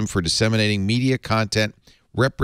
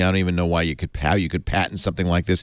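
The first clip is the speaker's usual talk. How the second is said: plain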